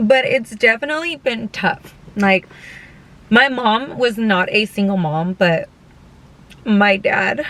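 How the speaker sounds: choked-up voice on the verge of tears. Speaker talking about their parents, getting emotional and choking up. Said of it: "oh my god, I'm not gonna cry".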